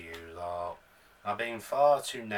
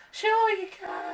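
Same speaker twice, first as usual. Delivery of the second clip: dry put-on woman's voice; 5 dB louder than usual. Voicing the reply to a request for a hug: dry put-on female voice. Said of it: "my female voice sounds a bit, ugh, a bit dry".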